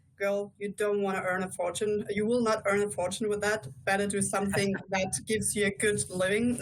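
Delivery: normal talking voice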